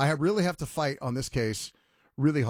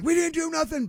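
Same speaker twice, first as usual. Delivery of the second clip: acted-out yell, much higher pitch; 14 semitones higher than usual. Retelling a phone call where kids yelled at the cops; retelling kids yelling. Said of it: "they're yelling like".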